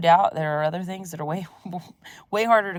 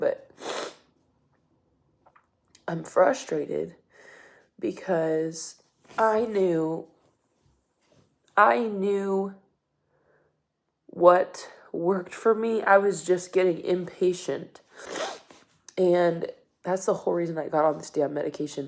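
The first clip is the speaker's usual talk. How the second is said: frustrated, tearful speech, crying through the words. On day four of stopping a medication, frustrated, crying while speaking. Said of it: "I'm crying".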